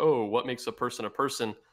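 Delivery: plain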